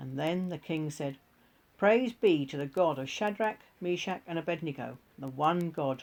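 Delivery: ordinary delivery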